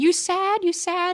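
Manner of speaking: put-on very high toddler voice. Retelling a funny video where a little boy asks his laughing dad: imitating a toddler. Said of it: "He just keeps saying".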